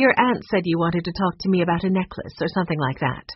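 ordinary delivery

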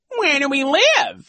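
taunting, mocking echo of words, very high pitch. Narrator reading the vice principal repeating the children's question, in a high, mocking tone. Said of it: "in his high, mocking tone".

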